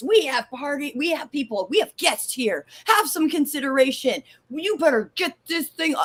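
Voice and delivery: high, furious, means-business angry child voice, acted. Retelling an angry childhood call about the pay-per-view: imitating her angry younger self. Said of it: "I was angry. I meant business".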